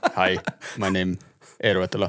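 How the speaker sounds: flat robotic talking voice. Mocking how a typical Finnish person talks: robotic Finnish-accented voice. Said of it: "He doesn't talk like a robot?".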